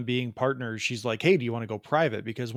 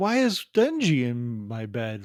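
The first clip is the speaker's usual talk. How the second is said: put-on drunk voice. Praising a voice actor's drunk voice job, quoting Himeno's drunk voice. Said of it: "amazing drunk voice job".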